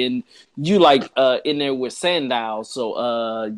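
ordinary delivery

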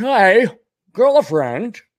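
mock New England accent, high. Telling a story, the speaker says the greeting in a Thurston Howell III voice.

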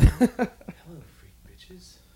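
very high-pitched podcast host voice. Joking about a podcast ranking: Joe Rogan impersonation. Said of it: "a good Joe Rogan impersonation".

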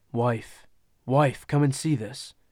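speaking low. Reading a story, the narrator voices a father calling his wife to come see: in a low voice. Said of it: "called in a low voice".

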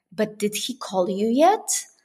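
whispered voice. Retelling what mom whispered at a celebration dinner: imitating a whisper. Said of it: "my mom whispered to me and she says".

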